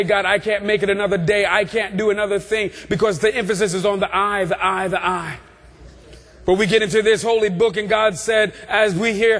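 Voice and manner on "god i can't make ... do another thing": ordinary talk, nothing marked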